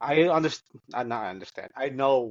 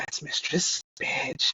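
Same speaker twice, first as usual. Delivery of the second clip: hushed, voiceless whisper. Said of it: "And I'm like".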